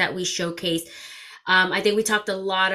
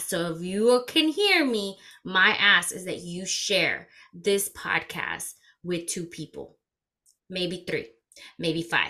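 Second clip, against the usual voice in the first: deliberately slow, careful delivery; 4 dB quieter than usual. Host asks listeners to share the podcast, talking slowly. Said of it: "I'm gonna talk slow".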